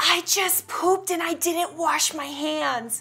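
put-on child voice, whispering. Retelling what a five-year-old whispered while grabbing a face: imitating a child whispering. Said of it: "grabs my face and whispers".

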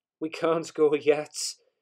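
loud, slow, said through laughter. The driver answers the fireman, who wants to set off, laughing. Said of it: "laughed the driver".

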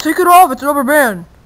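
loud, high-pitched yell.

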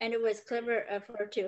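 plain reading voice

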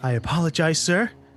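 mock news-broadcast announcer voice, put-on delivery. Apologizing to a friend who teases the voice, in a mock newscaster voice. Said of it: "Why are you going all, like, news broadcast on me?".

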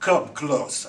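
put-on gruff voice. Retelling what the sister lying in bed said to the speaker, retelling a gruff voice. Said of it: "with a real gruff tone".

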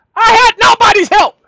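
very high, shrill, very loud yelling. Addressing listeners before someone asks why he's yelling, yelling. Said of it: "what I'm yelling for?".

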